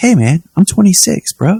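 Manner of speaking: put-on very high young man's voice, old-time TV hero style. Comparing early and late seasons of a show: imitating young Dean Winchester voice. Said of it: "The Evolution of Dean Winchester's Voice".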